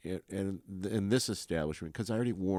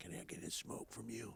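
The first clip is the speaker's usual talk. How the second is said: barely-there, hushed, breathy whisper; 3 semitones higher, 18 dB quieter than usual. Retelling how a neighbour asks for cigarettes: imitating someone whispering. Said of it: "you can hear he's whispering".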